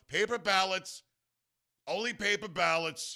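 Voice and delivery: slow, put-on growling voice. Retelling a speech on paper ballots, imitating Trump's growl. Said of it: "puts on this growl".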